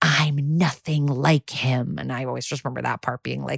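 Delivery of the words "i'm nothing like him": put-on creepy whisper, lower. Retelling a scene where one leans in with a creepy smile: imitating a creepy whisper. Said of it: "and he whispers".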